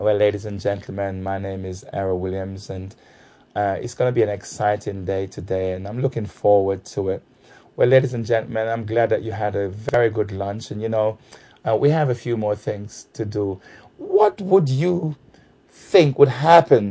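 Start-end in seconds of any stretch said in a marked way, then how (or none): 0.0-13.6 dull, flat, droning, sleep-inducing monotone delivery. Showing how a trainer opens a training day: imitating a boring, sleep-inducing trainer. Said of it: "you're actually putting people to sleep".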